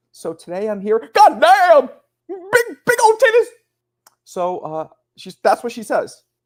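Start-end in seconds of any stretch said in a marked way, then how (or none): 1.1-3.4 mock very high screaming old Southern man voice. Describing a woman who screams out of nowhere, imitating her old-Southern-man screaming.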